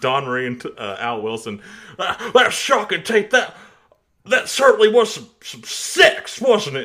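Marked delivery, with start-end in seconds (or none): 2.0-6.9 very high-pitched, loud, belted exclamation. Quoting a wrestling commentator talking about a shocking tape: Jim Ross impression. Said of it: "you're quoting Jim Ross talking about".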